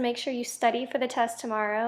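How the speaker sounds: ordinary talk, nothing marked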